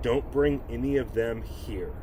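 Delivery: put-on serious tone. Retelling what a woman said to them as a fourth grader, serious tone. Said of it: "said to me with a serious tone".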